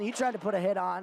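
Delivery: tried stressed, pushed out clearly. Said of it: "Emphasis on the word tried".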